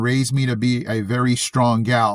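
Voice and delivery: ordinary talk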